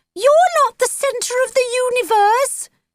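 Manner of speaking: goofy, silly put-on voice, very high-pitched. Reading a story, voicing a character's line in a silly, high-pitched voice. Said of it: "said Jake in a silly, high-pitched voice".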